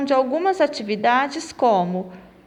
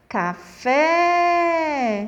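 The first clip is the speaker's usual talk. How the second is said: café with last syllable strong; 2 semitones higher than usual. Teaching portuguese oxytone words, café stressed on the last syllable. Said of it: "que mais saiu da minha boca? Foi o fé".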